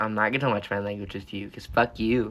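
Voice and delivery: ordinary talk, nothing marked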